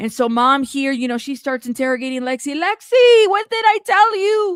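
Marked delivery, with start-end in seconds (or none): 2.5-4.6 put-on very high, slow, drawn-out Mexican accent. Imitating a mom interrogating Lexi: Mexican mama voice. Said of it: "in her in her mama Mexican voice".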